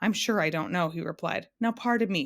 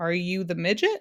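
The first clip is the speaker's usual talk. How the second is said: hesitant, doubtful, slightly unsure tone. Narrator reads Talk asking the man at the door, with a hint of uncertainty. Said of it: "with a hint of uncertainty in his voice".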